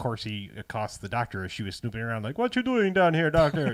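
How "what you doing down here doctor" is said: put-on Jamaican accent, poorly done. Recounting how he accosted the snooping doctor: bad Jamaican accent. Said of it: "doing a Jamaican accent".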